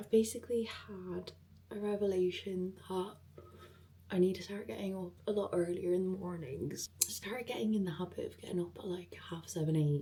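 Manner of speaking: hushed whisper throughout. Talking at seven a.m. while someone in the house is still asleep, whispering. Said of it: "I'm whispering because Maeve's still asleep".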